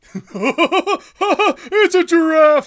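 very high, loud, belted cartoon voice. Doing an impression after offering to voice characters: Patrick Star voice. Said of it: "a pretty good Patrick Star impression".

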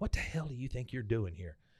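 hushed stage whisper under the breath. Retelling a scene where a character half-whispers to a visitor: imitating a half-whisper. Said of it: "she starts whispering to him".

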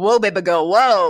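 jokey, playful, tossed-off catcall whoop. Retelling how Niles reacted to her dress: imitating Niles, jokey catcall. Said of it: "But it was very jokey".

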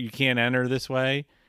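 ordinary talk

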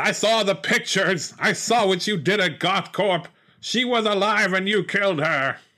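high, accusing villain voice.

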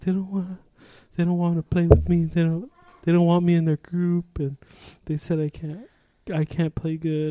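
put-on halting, high-pitched child voice on the verge of tears. Retelling a kid's complaint about being left out, imitating a kid about to cry. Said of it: "about to cry".

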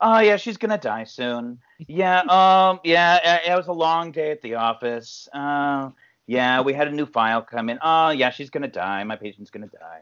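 mocking, totally casual, completely nonchalant put-on delivery. Imitating the wife's establishing line in the movie: imitating a completely nonchalant line. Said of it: "completely nonchalant".

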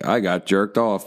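speech-synthesizer robot voice, robotic and synthesized. Joking about telling the story on the news: robot voice in a wheelchair. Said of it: "that robot voice in a wheelchair".

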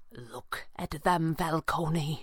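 slow, hushed, barely voiced whisper. Reading a story aloud, a character speaks barely above a whisper.

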